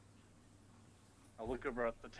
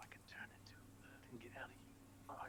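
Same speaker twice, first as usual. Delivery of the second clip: very soft, close whisper. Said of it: "I'll whisper at Riken".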